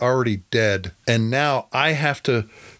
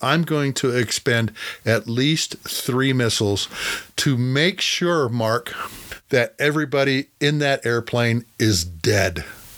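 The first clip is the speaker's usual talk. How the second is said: ordinary talk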